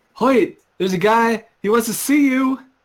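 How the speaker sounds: shouting. Player at the bottom of a tower calls up to someone above, yelling up. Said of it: "I'm yelling up to Hoyt".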